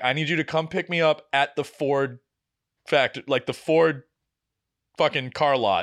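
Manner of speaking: ordinary talk, nothing marked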